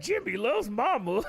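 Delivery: high-pitched, simple caveman way of talking. Describing how Blanca talks later on, quoting him in a caveman voice. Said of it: "he talks like a fucking caveman".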